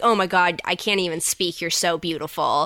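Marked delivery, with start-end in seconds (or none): none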